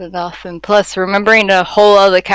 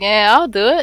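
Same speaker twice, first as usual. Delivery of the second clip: mock-unconcerned delivery; 2 semitones higher than usual. Retelling how there was no concern about agreeing to do it, acting out an unconcerned reply. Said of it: "There was no concern, no nothing".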